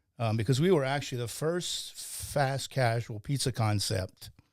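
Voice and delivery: ordinary talk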